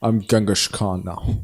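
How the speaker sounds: put-on Scottish accent. Imagining an actor playing Genghis Khan: Sean Connery impression. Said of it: "I wanna see him, like, play, like, Genghis Khan".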